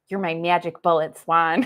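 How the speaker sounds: put-on Midwestern accent. Retelling what a client said: imitating a client's midwestern accent. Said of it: "Midwestern accent".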